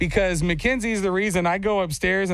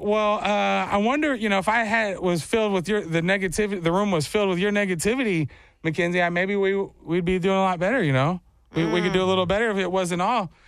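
usual speaking voice

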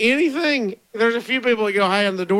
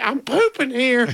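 mock elderly woman voice. Reading someone's message about what they say at home, old lady voice. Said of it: "I use an old lady voice and say".

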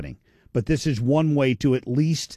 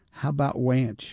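put-on tiny, small little kid voice. Retelling a car ride, a child in the back seat asks in a little child's voice. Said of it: "this little voice that says".

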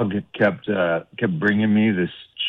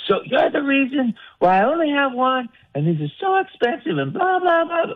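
put-on angry yell, much higher. Retelling what she yelled after finding the speaker playing fetch with her shoe, mock-angry. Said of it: "She yells".

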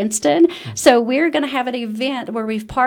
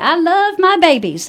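sweet, cute country voice, high and raised; 7 semitones higher, 6 dB louder than usual. Telling people how to recognise your amazing director, imitate Tammy Mitchell's little country cute voice. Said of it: "in her little country cute voice".

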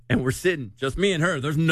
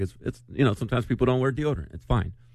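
ordinary delivery

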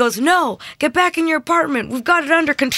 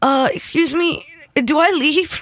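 put-on drowsy, sleepy voice. Retelling asking firefighters whether to leave, imitating own sleepy voice. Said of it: "I'm that, like, sleepy".

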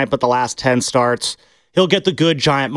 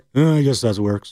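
put-on old man voice; 3 semitones lower than usual. Imagining a late team owner looking down on a stadium: Al Davis impression. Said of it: "your Al Davis impression".

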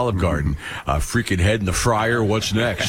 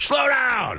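mock, very high hollered yell. Acting out yelling at drivers in the neighborhood: imitating his own yell. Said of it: "I yell "slow down" a lot".

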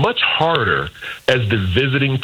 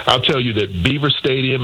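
ordinary talk

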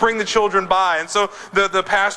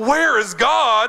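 bellowing, stern, preacher-like voice; 4 semitones higher than usual. Telling a story of a preacher questioning a boy, retelling a bellow. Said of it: "he bellowed out".

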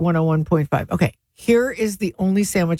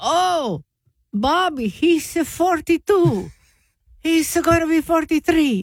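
put-on Italian accent, much higher; 11 semitones higher than usual. Speaker acts out a portuguese villager answering about his dog's age: italian accent. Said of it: "That's like an Italian accent".

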